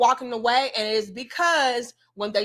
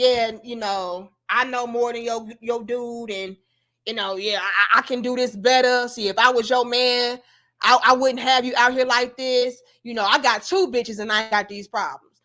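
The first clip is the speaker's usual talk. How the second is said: play-acted, swaggering, condescending know-it-all voice. Asking whether to lock up Kevin, acting him out: condescending Kevin impression. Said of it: "Was Kevin over here being condescending".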